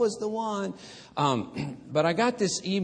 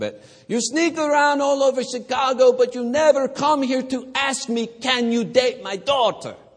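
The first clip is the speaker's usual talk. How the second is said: mock-upset, angry tone, much higher; 9 semitones higher, 8 dB louder than usual. Retelling what a woman's father said to him; imitating an upset father. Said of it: "And that upset him greatly".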